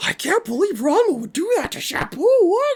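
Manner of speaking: very high, swooping, ridiculous cartoony voice. Imitating the onlookers' voices from the dub version: imitating ridiculous cartoony onlookers. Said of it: "they sound so ridiculous and cartoony".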